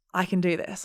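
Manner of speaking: put-on softly spoken, soft voice. Retelling what a contractor said on a beach walk: imitating a softly spoken voice. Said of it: "very softly spoken".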